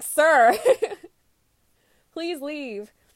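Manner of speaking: loud, high-pitched, dismissive laughing shout. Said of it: "I was like".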